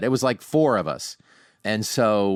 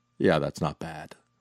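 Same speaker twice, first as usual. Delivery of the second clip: low, flat, dry deadpan with no reaction; 5 semitones lower, 4 dB quieter than usual. Retelling a man's reaction after hearing the speaker's impression, retelling a deadpan reply. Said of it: "he just deadpans".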